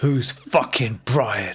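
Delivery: rough, gruff, rumbling bugbear creature voice. Narrating a bugbear-like creature who spots the decorations, gruff rumbling voice. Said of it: "this kind of like gruff, uh, rumbling voice".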